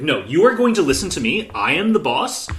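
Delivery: ordinary delivery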